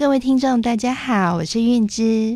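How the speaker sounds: gentle, light, sugary, sweet speaking voice. A speaker demonstrates how she sounded in her early thirties; her younger sweet voice. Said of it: "我示范一下我年轻的时候讲话的腔调".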